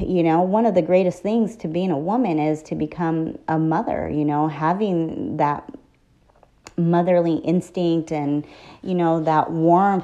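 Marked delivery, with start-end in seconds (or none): none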